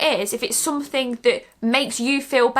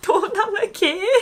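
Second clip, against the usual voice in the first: put-on Scottish accent, higher pitched; 7 semitones higher than usual. Trying a viewer's name for a shout-out: Scottish accent. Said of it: "In a Scottish accent!".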